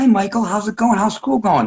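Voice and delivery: mock, high, patronizing talking-down tone like baby talk. Mocking adults who talked down to an eight-year-old: imitating a patronizing tone to a child. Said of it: "I did not like that tone".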